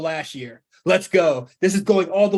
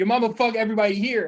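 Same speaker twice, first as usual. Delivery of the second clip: put-on wrestler yell, higher pitch; 3 semitones higher than usual. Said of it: "Why is he yelling?".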